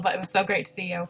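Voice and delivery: soft, emotional, overcome voice, close to tears. Addressing Hugh after sharing a photo with him: getting emotional. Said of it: "I'm getting emotional".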